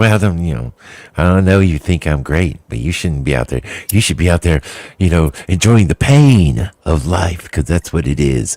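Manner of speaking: catty, snippy, bitchy voice. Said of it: "turns into a huge bitch for no reason".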